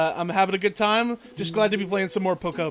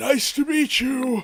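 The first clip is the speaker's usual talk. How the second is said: put-on high, generic, stock old man voice; 5 semitones higher than usual. Voicing a game character's lines in a generic old man voice. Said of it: "I'm just gonna give him a generic old man voice".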